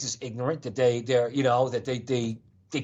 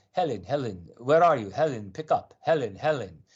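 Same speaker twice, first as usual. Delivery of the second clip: Middle Eastern way of speaking. Retelling a man's answering-machine message asking for Helen, in a Middle Eastern accent. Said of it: "with a Middle Eastern voice on the answer machine".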